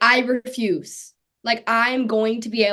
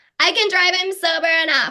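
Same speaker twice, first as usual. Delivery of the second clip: mock, tipsy drunk voice, pitched up; 7 semitones higher than usual. Retelling what they used to claim before driving: imitating own drunk self. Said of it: "that's always my drunk voice".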